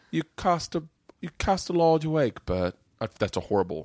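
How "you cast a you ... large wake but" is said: put-on condescending, slow, high British accent. Retelling what a British friend said to him: imitating a British accent. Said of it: "he said it in a British accent".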